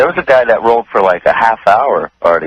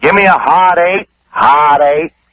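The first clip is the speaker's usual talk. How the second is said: put-on drunk man's high, yelling screams; 6 semitones higher than usual. Telling Howard about a winning drunk gambler at the craps table, retelling his screaming. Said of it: "He was screaming".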